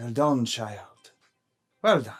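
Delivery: hushed, almost half-whispered elf voice. Narrating an elven voice that speaks into a player's mind, elven voice, almost half-whispering. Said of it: "an elven voice between your ears, almost whispering into your mind".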